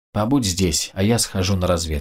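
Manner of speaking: ordinary delivery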